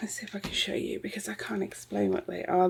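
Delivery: soft, unvoiced whisper.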